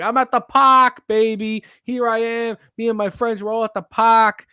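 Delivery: exaggerated, high Massachusetts Boston accent. Suggesting how to walk in at the game, in a heinous Boston accent. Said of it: "a heinous Massachusetts Boston accent".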